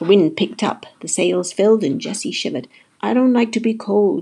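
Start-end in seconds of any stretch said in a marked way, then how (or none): 3.0-4.2 moaned, whiny voice. Jessie shivers as the wind fills the sails; moaning. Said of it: "she moaned".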